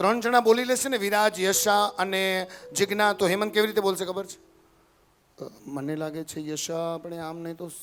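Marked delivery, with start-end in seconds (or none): 5.7-7.7 imitated voice, very slow. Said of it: "simply એકદમ slow અવાજ".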